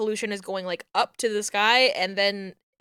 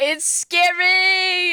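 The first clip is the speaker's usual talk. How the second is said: shrill, very high, loud frightened voice, word "scary" stretched out; 9 semitones higher, 5 dB louder than usual. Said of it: "You can hear the fear in my voice".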